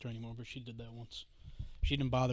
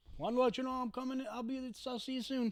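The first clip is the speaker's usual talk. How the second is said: flustered stammering, higher and quieter; 13 semitones higher, 7 dB quieter than usual. Retelling a phone call where the boss answered: imitating own stumbling over words. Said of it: "stumbling over my words".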